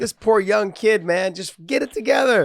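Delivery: mock yelling. Retelling what was said while watching the fight on TV: retelling a yell. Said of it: "I was yelling at the T V".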